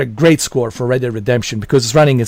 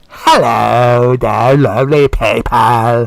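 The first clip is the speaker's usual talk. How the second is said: very slow, witchy British voice, "hello" stretched; 3 dB louder than usual. Mocking how a video host opens his Nintendo Switch videos, witchy British impression. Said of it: "It's like like some kind of witch".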